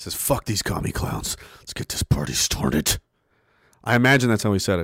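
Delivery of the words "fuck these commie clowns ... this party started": put-on, unsettlingly intense whisper. Imagining how another person said it, mock disturbingly intense. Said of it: "really disturbingly intensely".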